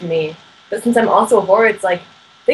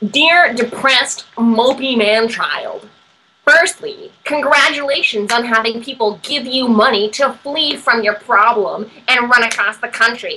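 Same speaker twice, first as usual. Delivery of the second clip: nasal put-on voice with a slight lisp; 3 semitones higher than usual. Reading a letter aloud in a put-on voice, nasal with slight lisp. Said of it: "Maybe just nasally and maybe like a little bit of a lisp".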